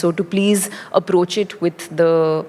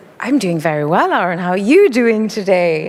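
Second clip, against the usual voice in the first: weak, not-very-good put-on British accent; 2 semitones higher, 3 dB louder than usual. Asked to show it, answering a greeting in a British accent. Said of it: "see you do a little bit of British accent?".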